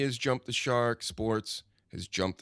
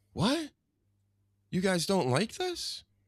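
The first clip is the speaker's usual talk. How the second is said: put-on stunned disbelief, high and swooping; 10 semitones higher than usual. Retelling how a booed woman reacted, imitating a shocked speaker. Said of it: "She was shocked by it".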